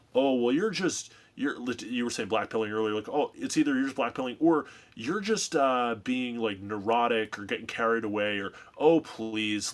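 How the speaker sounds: usual speaking voice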